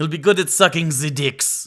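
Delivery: put-on German scientist-style accent. Retelling a German scientist's answer to the military, in a German accent. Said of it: "all that would be in a German accent".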